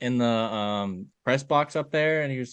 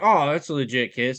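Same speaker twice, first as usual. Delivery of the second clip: ordinary talk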